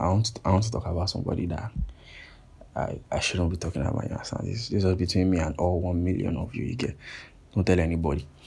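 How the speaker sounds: hushed, secretive whisper. Confiding about someone they shouldn't be talking about: whispering. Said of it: "I'm going to whisper".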